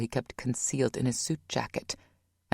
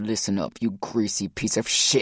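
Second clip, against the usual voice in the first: angry growling, lower pitch; 4 semitones lower than usual. Reading a story aloud, voicing Rock threatening a receptionist: growled. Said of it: "Rock growled".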